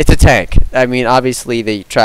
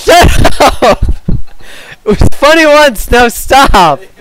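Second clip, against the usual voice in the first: very high, loud, drawn-out words through laughter; 13 semitones higher, 5 dB louder than usual. Trying to start recording while another speaker keeps joking: laughing while talking. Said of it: "Why are you still laughing?".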